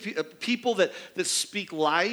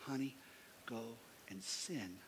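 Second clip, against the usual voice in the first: gentle, very low, hushed, quiet half-whisper; 9 semitones lower, 20 dB quieter than usual. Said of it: "just whispering in her ear".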